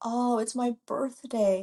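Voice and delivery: slow, sobbing delivery with words broken by sobs. Retelling what a crying celebrity patient said: imitating someone sobbing. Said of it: "And she's sobbing".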